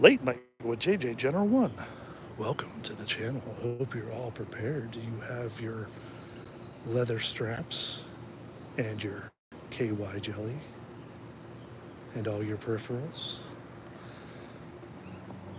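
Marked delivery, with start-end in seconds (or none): 0.0-13.4 low, hushed, soft, purring late-night host voice. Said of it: "Do you like the Late Night Joe voice?".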